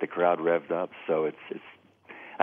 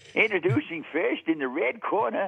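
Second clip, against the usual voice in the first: put-on very high-pitched old-timer ring announcer voice; 13 semitones higher than usual. Asked how that voice would sound in the ring, the speaker does a Walter Brennan impression. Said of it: "sounds like Walter Brennan as a ring announcer".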